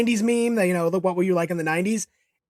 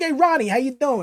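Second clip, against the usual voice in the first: put-on heavy New York accent, laid on thick; 3 semitones higher than usual. Imagining someone greeting Ronnie, speaker does a thick New York accent. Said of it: "like a thick New York accent".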